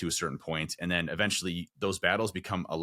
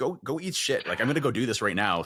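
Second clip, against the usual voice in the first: defiant, high-pitched tone; 6 semitones higher, 3 dB louder than usual. Retelling answering a doubting mind mid-workout: retelling defiant self-talk. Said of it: "I'm like".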